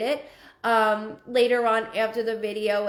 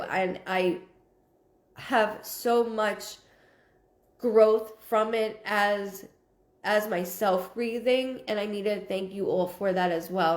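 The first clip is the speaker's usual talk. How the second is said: voice catching with emotion, choked up, holding back tears. Thanking everyone for the growth it brought, getting choked up. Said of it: "I'm trying not to get choked up".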